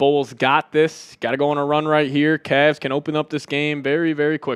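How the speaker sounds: usual speaking voice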